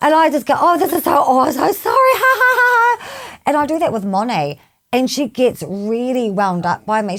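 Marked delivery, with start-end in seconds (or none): 0.6-3.4 very high-pitched, hysterical giggling while speaking. Retelling apologizing to someone who fell over: imitating own laughing apology. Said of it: "while I'm asking you if you're okay, I'm laughing hysterically".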